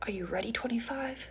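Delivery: hushed, very soft whisper, close to the ear. Recounting a sexual encounter, retelling the man's whisper. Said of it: "He whispers in my ear".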